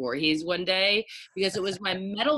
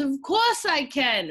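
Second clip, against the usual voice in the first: put-on slow, high-pitched Jersey City accent; 8 semitones higher, 4 dB louder than usual. Speaker retells their dad's reply to a request, Jersey City accent. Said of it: "with the Jersey City accent".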